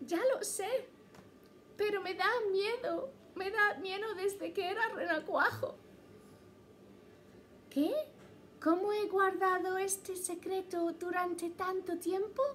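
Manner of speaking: high-pitched little cartoon frog character voice. A frog confides a secret to the listener, in a frog character voice. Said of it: "pero si eres rana".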